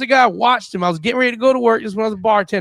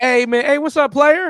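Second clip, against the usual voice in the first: put-on strung-out addict voice, pitched higher; 4 semitones higher than usual. Describing how a known crackhead walks up to people, imitating Slick. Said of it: "if Slick walks".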